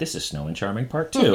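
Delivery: ordinary delivery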